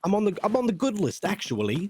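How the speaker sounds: put-on very proper British boy voice. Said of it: "very proper".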